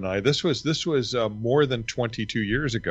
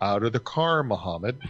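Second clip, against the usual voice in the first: ordinary talk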